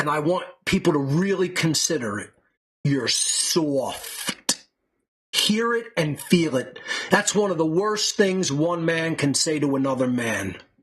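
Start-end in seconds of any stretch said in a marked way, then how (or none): 2.8-4.6 low voice, full-on New York accent. Showing how to say the insult, in a total New York accent. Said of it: "Say it in a total New York accent".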